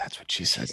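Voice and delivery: soft, quiet, barely voiced whisper. Retelling a joke said to his wife this morning: imitating a quiet whisper. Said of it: "I just quietly whispered".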